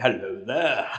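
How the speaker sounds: put-on festive greeter voice. Parent tries out the voice once used for their children: Father Christmas voice. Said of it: "Father Christmas voice".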